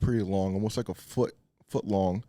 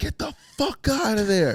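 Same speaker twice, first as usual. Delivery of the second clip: mock distant yell, very high and drawn-out; 6 dB louder than usual. Retelling how a guy yelled from a distance: imitating someone yelling. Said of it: "the guy yells from a distance".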